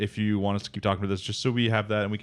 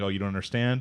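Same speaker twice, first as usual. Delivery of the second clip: mock crying, tearful voice. Retelling an anime scene where a character cries while speaking: imitating someone crying. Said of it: "crying, being like".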